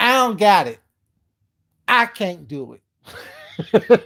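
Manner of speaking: heavy attitude, every word very slow and drawn out. Repeating Leandra's line, imitating her tone of attitude. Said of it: "in that tone of attitude too".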